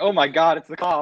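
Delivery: typical put-on American accent, words drawn out. Imitating how Americans react to police: imitating an American. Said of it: "that's another one of Americans".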